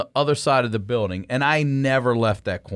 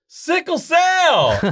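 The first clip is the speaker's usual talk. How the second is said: put-on very high, loud screech, cell drawn out; 6 dB louder than usual. Retelling how she came down the hallway, imitating her screaming. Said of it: "she comes down the hallway and she screams".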